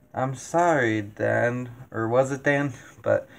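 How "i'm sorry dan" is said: cool, courteous robotic voice. Quoting the film's creepy machine line: imitating HAL, polite and cold. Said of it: "just politely, but, like, that coldness behind it".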